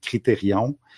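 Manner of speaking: word pronounced with Québécois accent.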